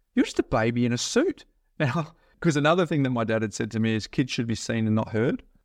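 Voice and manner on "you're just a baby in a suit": put-on disdainful tone. Retelling what a lady said to them when they got up there, imitating disdain. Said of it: "this lady just looks at me with disdain on her face".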